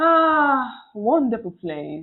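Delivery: sarcastic praise meaning its opposite. Describing where they are currently staying: sarcastic. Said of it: "You know the sarcasm".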